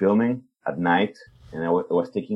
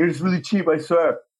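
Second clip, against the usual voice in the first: mock shrill, high-pitched, raised shout; 10 semitones higher than usual. Retelling yelling at a man coming toward him: imitating own past yelling. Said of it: "I was yelling at him".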